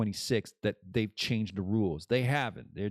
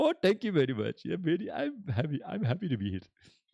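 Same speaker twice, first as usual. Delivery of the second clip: animated, high, swooping sing-song put-on character voice; 6 semitones higher than usual. Voicing a friend Apu answering how he is doing: Apu voice. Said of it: "calm down there, Apu".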